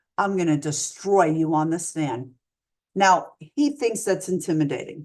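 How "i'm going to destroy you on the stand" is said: whispering, lower. Retelling a defense attorney's threat before a trial: imitating a whisper. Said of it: "whisper in my ear".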